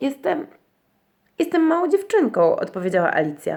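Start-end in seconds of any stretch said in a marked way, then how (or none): 0.0-2.6 unsure, doubtful tone, pitched up. Alice answers the pigeon, who asked what she is, rather doubtfully. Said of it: "Raczej z powątpiewaniem".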